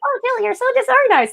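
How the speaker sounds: very high, squeaky, chipmunk-like helium voice. A speaker voices her own self-critical thought in a helium voice. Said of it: "I imagine it with a helium voice".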